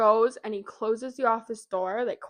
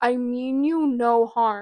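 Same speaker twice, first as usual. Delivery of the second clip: mock, drawn-out, very deliberate, slow, loud shout; 2 semitones higher, 6 dB louder than usual. Retelling a scene where a character calls out to ghosts: imitating a character shouting. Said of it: "So he just shouts out".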